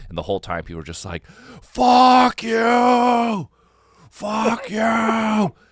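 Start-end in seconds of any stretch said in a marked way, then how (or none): 1.6-5.5 shrieked scream, very high and very slow. Retelling how the crowd reacted to the show: imitating people screaming. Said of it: "just screaming".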